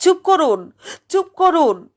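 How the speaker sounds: almost shouting. A man cuts off a gentleman's story, almost shouting. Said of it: "প্রায় চেঁচিয়ে বলল অসীম".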